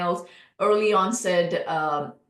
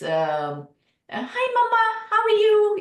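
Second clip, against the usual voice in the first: cartoon mouse voice, much higher, louder; 3 dB louder than usual. Showing how Brian's voice once sounded before it was modulated; Mickey Mouse voice. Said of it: "Like this Mickey Mouse kind of a voice".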